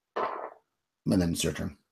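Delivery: ordinary delivery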